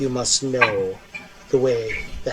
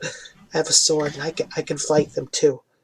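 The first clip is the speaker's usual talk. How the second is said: timid, meek, soft-spoken quiet voice; 3 semitones higher, 4 dB quieter than usual. A player speaking as their character, holding up a small sword: meek, quiet voice. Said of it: "just in a meek, kind of quiet voice".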